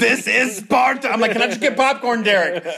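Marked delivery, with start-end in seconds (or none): 0.0-1.1 put-on loud bellowing warrior battle-cry yell. Recalling how a guy kept yelling at everybody, retelling a yell. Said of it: "he just kept yelling at everybody".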